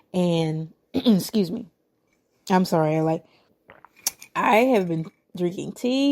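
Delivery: scratchy, raspy, worn-out hoarse voice. Speaker interrupts their own story to apologize, raspy voice. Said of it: "My voice has been kind of raspy".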